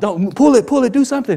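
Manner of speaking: high, mock urgent shouting. Retelling how a man with a bullhorn yelled at a crashing man: retelling an urgent yell. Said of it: "trying to run at him, yell him".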